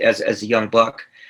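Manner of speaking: ordinary talk, nothing marked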